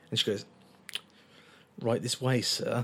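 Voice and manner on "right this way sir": mock strained politeness hiding disgust, lower, quieter. Retelling a jazz bar hostess seating a customer: imitating forced politeness hiding disgust. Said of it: "Like that".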